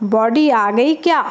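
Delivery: ordinary delivery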